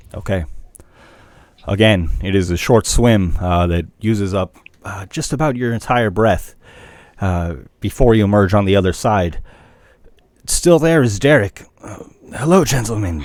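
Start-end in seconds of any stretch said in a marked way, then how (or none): 12.3-13.2 stage-hushed voice. Narrating a scene, the storyteller voices Derek greeting the players: Derek's hushed voice. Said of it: "Derek says in a hushed voice".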